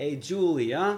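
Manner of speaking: put-on Italian accent. Talking about who started an accent, the speaker shows their put-on italian accent. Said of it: "putting on an Italian accent".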